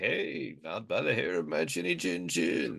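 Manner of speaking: soft, gritty, croaky, rough, low-key creaky voice. Acting out Ted's reply to a machete-wielding Santa, in a Ted impression. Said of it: "That's my Ted impression".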